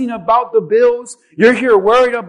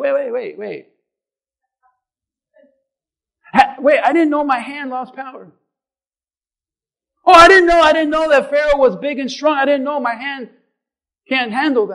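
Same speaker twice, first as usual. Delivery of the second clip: sarcastic, teasing voice of feigned surprised disbelief; 2 semitones higher than usual. Retelling how God answers a doubting leader: sarcastic God voice. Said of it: "God's being a little sarcastic here".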